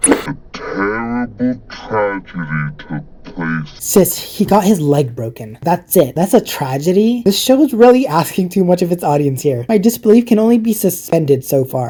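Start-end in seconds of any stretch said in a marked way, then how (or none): 0.1-3.7 very deep, very slow, distorted drag. Reviewing a show and reading out one of its lines, slow and distorted. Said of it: "(slow and distorted)".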